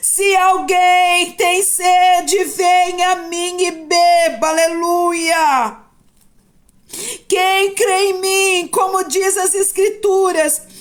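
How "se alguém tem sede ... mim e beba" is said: put-on shout, higher and louder. Preaching, acting out the call to those who thirst: acting out Jesus shouting. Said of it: "Ele está gritando agora".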